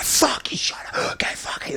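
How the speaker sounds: play-acted snapping, whispered, hushed furious rage. Retelling snapping at someone who scared the nurse: imitating own angry outburst. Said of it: "but I lose my shit".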